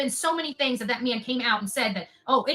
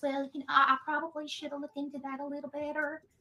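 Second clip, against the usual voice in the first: sugary, soft, sweet put-on Southern accent; 2 semitones higher, 7 dB quieter than usual. Ranting about a man's retractions, imitating his sweet little southern voice. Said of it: "his sweet little southern voice".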